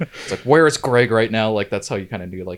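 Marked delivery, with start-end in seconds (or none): 0.4-1.5 loud, insistent, demanding tone. Retelling Dad asking Mom where Greg is: imitating Dad asking loudly. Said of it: "requesting loudly to my mom".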